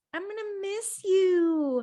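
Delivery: put-on very high girly voice, drawn-out "you". Retelling what Paige says to someone, in Paige's girl voice. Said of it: "she goes into her girl voice and goes".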